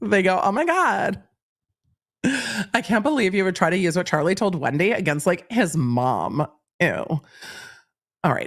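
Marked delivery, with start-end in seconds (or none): 0.4-6.9 put-on, swooping Valley Girl voice. Reading a legal motion aloud to Emily: Valley Girl voice. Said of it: "just read it in Valley Girl".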